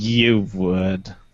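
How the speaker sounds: disdainful tone. Answering whether another speaker would like the show: with disdain. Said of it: "You don't have to say that with such disdain".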